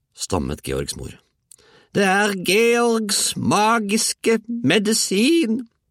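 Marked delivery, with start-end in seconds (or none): 2.0-5.7 very high-pitched, very slow, drawn-out shout. Grandma shouts to George's stammering mother. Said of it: "ropte bestemor".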